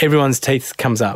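usual speaking voice

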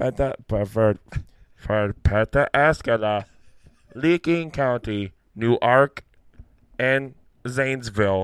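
put-on creepy, Swedish-sounding automated voice. Imitating an automated voice that mispronounced place names, creepy automated voice. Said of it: "that creepy-ass voice".

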